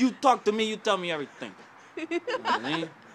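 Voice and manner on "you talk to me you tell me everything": put-on higher-pitched, louder, heavy Jamaican accent. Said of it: "But I can be Jamaican".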